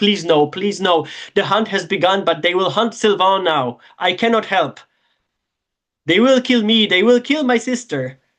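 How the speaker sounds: sobbing, crying, wailing lament. Voicing a character who drops back, pleading with the group: crying, wailing plea. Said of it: "he's crying, he's wailing, and he's like".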